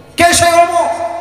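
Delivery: high, loud, fervent, impassioned cry.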